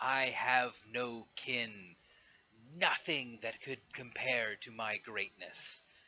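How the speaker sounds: slow, snarling beast-like dragon voice. Game master voicing a dragon asked why he did that to his kin, snarling dragon. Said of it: "snarls and says".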